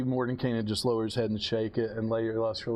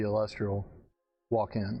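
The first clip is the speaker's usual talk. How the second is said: usual speaking voice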